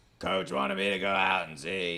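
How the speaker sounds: put-on low, elderly woman voice, put on. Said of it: "a better Mahomes impression".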